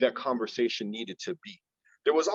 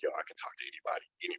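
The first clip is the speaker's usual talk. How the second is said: fast, unvoiced whisper. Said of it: "sometimes I'm like".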